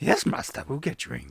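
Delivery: put-on chain-smoker voice. Voicing a chair that answers its owner: Yoda voice like a chain smoker. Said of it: "Yoda turned into some sort of chain smoker by the voice you gave him".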